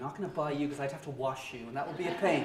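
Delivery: ordinary delivery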